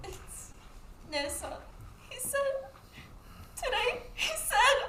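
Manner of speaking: choked, tearful, crying whisper. Asked why he isn't coming back, the speaker answers while crying. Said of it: "Why are you crying?".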